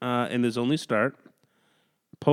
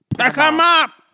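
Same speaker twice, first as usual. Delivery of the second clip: high, loud, squealing elf voice. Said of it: "You sound like a fucking elf".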